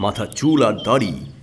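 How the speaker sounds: plain reading voice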